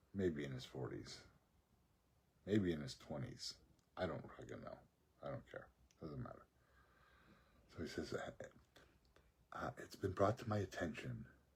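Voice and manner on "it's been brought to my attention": very slow, halting, hushed whisper. Retelling what a library worker said to him: imitating someone whispering. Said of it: "He's whispering".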